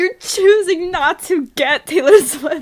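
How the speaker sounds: full-volume, heated, very loud, high-pitched screaming. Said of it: "why was I screaming for a second?".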